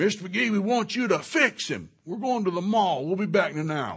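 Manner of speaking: very loud, very high, shrill shouted voice. Retelling a father pointing at his son and demanding a fix: imitating a father yelling. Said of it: "he yells".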